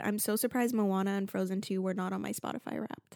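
plain

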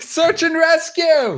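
very high, urgent, alarmed yell. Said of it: "as Duncan yells".

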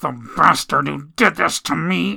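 through gritted, clenched teeth. Carson speaks after being told to see no other physician, through gritted teeth. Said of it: "Carson spoke through gritted teeth".

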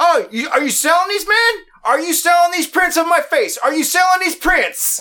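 loud, very high-pitched hollering yell. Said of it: "he's so loud".

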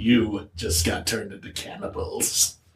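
slow, hushed, whispered villainous gloating voice. Picturing the judged cook scowling at the diners: imitating a villainous gloat. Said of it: "he's got that little villainous scowl on his face".

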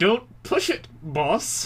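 through clenched teeth. Recapping the season, the speaker retells Chris's reply to his boss through gritted teeth. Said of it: "just like through his teeth is just like".

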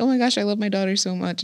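imitated crying voice. Joking about a quinceañera speech, imitating a crying mom. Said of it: "the mom's, like, crying".

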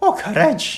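put-on swooping, sing-song accent of a sweet old lady. Recalling Courage the Cowardly Dog, praising Courage in a Muriel accent impression. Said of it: "Did she really have that accent?".

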